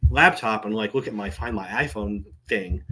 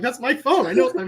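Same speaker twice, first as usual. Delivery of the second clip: yelling, higher pitch. Retelling a fight with a lady holding the phone: retelling own yelling. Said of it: "yelling at this lady".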